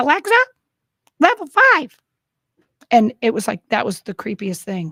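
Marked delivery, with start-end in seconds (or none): 0.0-2.0 put-on very high little child voice. Retelling the granddaughter giving a command to Alexa, in Liberty's little voice. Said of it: "little Liberty in her little voice goes".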